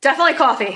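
very loud, broad, thick New Jersey accent. Answering whether she prefers tea or coffee: strong New Jersey accent. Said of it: "I just said that really Jersey".

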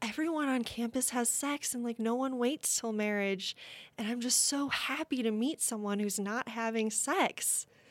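moved, heartfelt, emotional woman's voice. Speaker retells a woman's reaction to her, imitating someone getting emotional. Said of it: "And she got so emotional".

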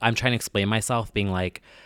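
plain

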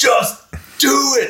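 shrill screaming, pitched very high. Imagining Shia LaBeouf running around screaming at people: imitating Shia LaBeouf screaming. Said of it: "screaming at people".

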